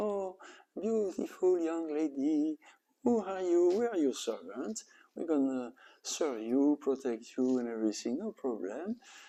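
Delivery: small, nice little put-on voice, high and soft. Telling how lust, anger and greed address a young lady: little voice. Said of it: "they took a little voice".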